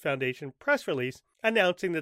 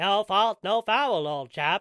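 put-on, brisk, snappy New England accent; 4 semitones higher, 4 dB louder than usual. Sending off mr. dacey: snappy new england accent. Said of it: "or whatever snappy New England accents sound like".

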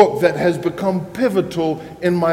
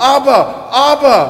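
put-on high, raised, childlike calling voice; 7 semitones higher, 5 dB louder than usual. Retelling how a little boy ran to a grown man crying out, in a childlike voice. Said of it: "he cried out in that childlike voice".

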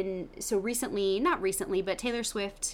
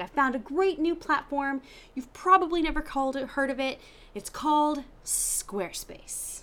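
high-pitched, very excited delivery; 6 semitones higher than usual. Retelling a client coming into a meeting, imitating an excited client. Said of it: "he's all excited".

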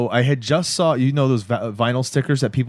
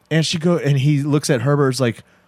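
plain

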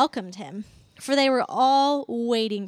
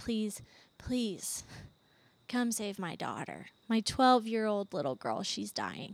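acted desperate pleading voice, quieter; 3 semitones lower, 10 dB quieter than usual. Retelling a father's plea at Jesus' feet, imitating begging. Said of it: "he's begging".

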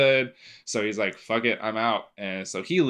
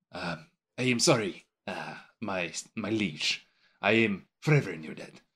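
cat character voice, quieter and slower; 4 dB quieter than usual. Recapping a movie scene, the speaker acts out the cat's apology in a Puss impression. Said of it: "that's a great impression".

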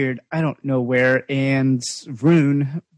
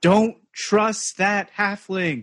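high, shouted call sounding from far off; 6 semitones higher than usual. Narrator voicing Howard calling out to the approaching players, Howard yelling from afar. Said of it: "Howard's going to yell from the distance".

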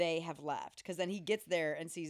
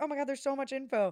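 high, loud, thrilled gush, bubbling over with excitement; 8 semitones higher, 6 dB louder than usual. Retelling a friend's reaction while watching the movie: imitating excited Asia. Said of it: "getting really excited".

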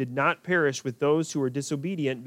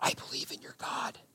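very quiet, soft, secretive whisper. Acting out Rahab speaking to the spies hiding in the flax: whispering as Rahab. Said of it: "She whispers to the spies".

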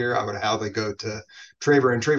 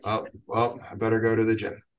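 put-on gloomy downer tone. Acting out someone making a New Year's resolution: mock gloomy downer tone. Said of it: "What a downer!".

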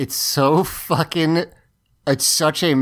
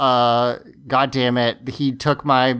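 plain

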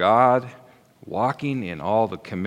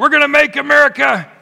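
very loud, very high, fired up and enthusiastic; 10 dB louder than usual. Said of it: "I said it with more enthusiasm".

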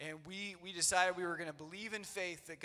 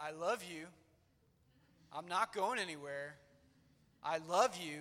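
composed, steady, calm, reassuring, comforting voice. Retelling hugging a struggling little girl: retelling own calm voice. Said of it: "And just in a calm voice".

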